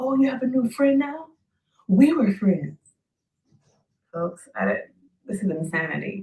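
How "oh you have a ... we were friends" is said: put-on, shrill, raised, yelled-out shout. Retelling someone shouting after seeing them with the chief of staff: imitating someone shouting. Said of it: "Salam shouts".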